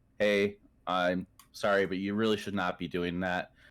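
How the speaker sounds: put-on firm, stern, no-nonsense tone. Retelling a reply to new streamers asking for follows: imitating own stern tone. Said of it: "put, like, a stern tone on and go".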